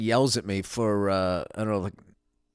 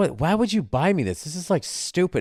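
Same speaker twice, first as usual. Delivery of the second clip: indignant, fed-up, mad, pitched-up complaining outburst; 8 semitones higher than usual. Retelling how she reacted to a gift, imitating someone getting mad. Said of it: "and she got mad. She goes".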